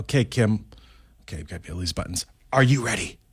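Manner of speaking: hushed low whisper. Radio host getting ready to play the secret sound for a caller, whispering. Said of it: "I don't know why I'm whispering".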